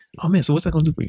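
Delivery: bright, very high, contained mild excitement, upbeat. Showing how to talk about the pleasure: mildly excited. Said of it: "we try to get excited, not like crazy excited, but like".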